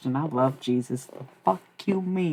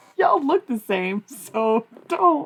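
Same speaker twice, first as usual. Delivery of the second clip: very high, loud words broken by laughter; 9 semitones higher, 5 dB louder than usual. Reacting to the chat, laughing while talking. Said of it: "I didn't mean to laugh".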